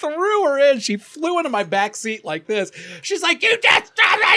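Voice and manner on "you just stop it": very high, loud woman's scream. Telling of a woman thrown into the back seat, the speaker imitates her screaming. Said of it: "She's screaming at this guy".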